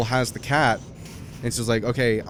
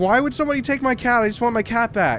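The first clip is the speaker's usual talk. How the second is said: mock tearful, sobbing little girl voice, very high; 11 semitones higher than usual. Retelling a story where a little girl wants her cat back, imitating a crying girl. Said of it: "she's like crying her eyes out".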